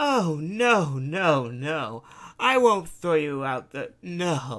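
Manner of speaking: speaking through a cackle. Reading a story, a woman answers a man's impatient question, cackling. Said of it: "She cackles and said".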